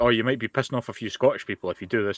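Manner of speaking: plain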